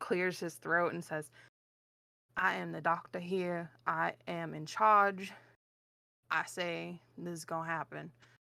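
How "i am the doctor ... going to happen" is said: put-on Southern accent, much slower. Retelling a scene, a speaker voices the doctor in a southern accent. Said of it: "everybody is southern in this".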